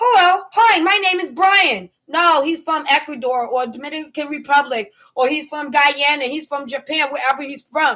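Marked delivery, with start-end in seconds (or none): 0.0-1.9 sounding like an American. Showing how some people talk so you think they're american: imitating an american way of talking. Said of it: "They talk like this".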